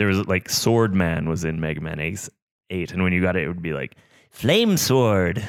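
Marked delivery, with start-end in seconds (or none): 4.3-5.4 nasal, flamboyant, high cartoon announcer voice. Retelling how a game announced a new weapon: imitating a cartoony voice. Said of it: "this really cartoony voice".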